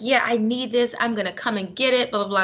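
ordinary talk, nothing marked

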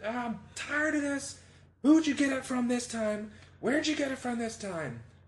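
very high, shrill, scolding yelling. Retelling the wife yelling at her husband at the hospital, retelling a yell. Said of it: "she's yelling at him".

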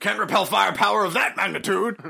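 very high, very loud, rough bellowing cry. Chatting about Star Wars, a speaker quotes the admiral in a Moncala-sounding Admiral Ackbar voice. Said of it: "a very Moncala-sounding voice".

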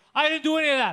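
high, loud, frantic shout. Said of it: "this is him".

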